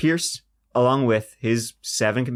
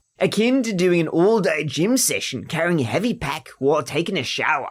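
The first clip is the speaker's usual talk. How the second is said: Australian accent, put on; 4 semitones higher than usual. Retrying a line at a co-speaker's urging, in an Australian accent. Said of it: "I should do this in an Australian accent".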